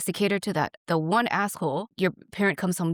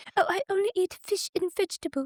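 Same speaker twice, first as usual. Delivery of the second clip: very high, fake put-on British accent; 12 semitones higher than usual. Imagining a restaurant scene with your mom, in a put-on british accent. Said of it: "was that a British accent?".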